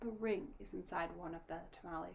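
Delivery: ordinary delivery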